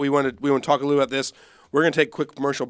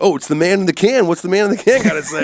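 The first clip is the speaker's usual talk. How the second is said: loud, obnoxious, belting shock-jock radio host patter; 5 semitones higher, 6 dB louder than usual. Retelling an old sketch's bit: Jimmy Fallon obnoxious radio host. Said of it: "doing the obnoxious radio host".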